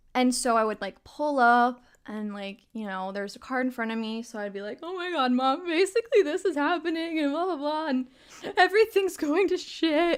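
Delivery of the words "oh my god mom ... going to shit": play-acted, pitched-up tearful blubbering through words. Retelling pulling up in the car while telling her mom everything, imitating own past sobbing. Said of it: "I would just be fucking sobbing".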